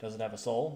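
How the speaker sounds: normal talking voice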